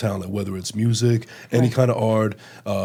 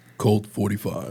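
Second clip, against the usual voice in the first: put-on commercial-style voiceover delivery. Telling how he asked Jason to say a phrase, the speaker repeats it: imitating Jason's voiceover voice. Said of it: "one of those kind of voices that you hear in a commercial or a voiceover".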